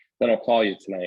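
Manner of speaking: usual speaking voice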